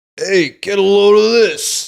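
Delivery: put-on loud, slow New York accent. Describing how people react to the Fantastic Four, stereotypical New York reaction. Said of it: "stereotypical, you know, New York reaction".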